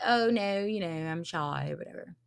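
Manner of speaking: put-on British accent. Speaker retelling a man declining an interview, put-on British accent. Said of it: "I don't know why I'm doing a British accent".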